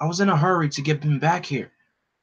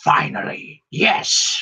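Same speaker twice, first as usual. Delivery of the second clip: put-on villain voice; 3 semitones higher than usual. Retelling a scene with a villain springing a trap: Lord Zed voice. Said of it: "I gotta do my best Lord Zed impression".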